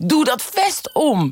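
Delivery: stretched-out, high-pitched, insistent shout. Speaker retells editors at home demanding it by phone, retelling a shout over the phone. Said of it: "schreeuwend door de telefoon".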